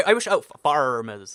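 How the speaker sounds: pirate-style rolled r's. Explaining how accents develop, trying a West Country accent with hard R's. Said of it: "people in uh, the West Country or pirates uh, pronounce their R's super hard".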